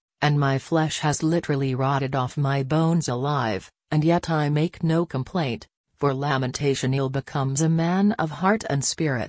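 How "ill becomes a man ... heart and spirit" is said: ordinary delivery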